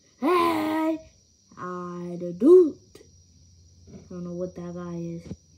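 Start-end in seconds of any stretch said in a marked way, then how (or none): 0.2-2.8 booming, very high, very slow, drawn-out cowboy holler. Voicing a caller behind the partner on a phone call: cowboy voice. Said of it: "He sound like a cowboy".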